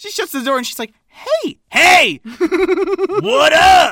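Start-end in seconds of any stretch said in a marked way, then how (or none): 1.1-3.9 undisguised natural voice, high, loud, very slow, drawn out. Retelling a movie scene where a character shuts the door: imitating Viola without her man voice. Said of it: "She forgets to put on her man voice".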